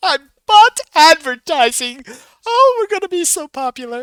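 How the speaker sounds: shrill, very high, loud yell. Voicing Myrtle standing up in a game scene: yelling as Myrtle. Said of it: "Myrtle stands up and yells".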